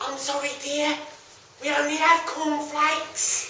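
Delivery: put-on small, soft, frail elderly woman's voice. In a stage play, the mother answers her child's demand, as a frail old lady. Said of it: "A small, frail old lady comes from down the stairs. / A small, frail old lady comes from down the stairs. / frail old lady comes from down the stairs. / frail old lady comes from down the stairs".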